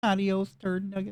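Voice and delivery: robot voice. Voicing a character who starts talking to the player: robot speak. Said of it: "starts talking to you in, like, robot speak".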